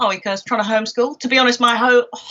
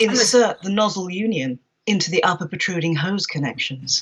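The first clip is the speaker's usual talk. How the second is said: seductive, sultry, sexy reading voice; 5 semitones lower than usual. Reading hose-assembly instructions meant for a sexy voice: sexy voice. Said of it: "definitely written to be read in a sexy voice".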